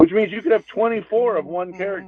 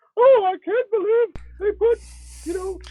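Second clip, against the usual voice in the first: very high, squeaky cartoon mouse voice impression. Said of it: "that's a better Mickey Mouse impression".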